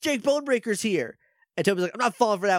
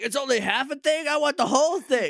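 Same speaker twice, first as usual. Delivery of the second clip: put-on high, bratty, angry, spoiled little child throwing a fit; 7 semitones higher than usual. Retelling a scene where Boy Count wants the whole thing: imitating an angry Boy Count. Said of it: "Boy Count is mad at something again".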